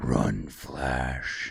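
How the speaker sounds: deep, epic villain voice. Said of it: "epic voice coming from this, like, imposing man".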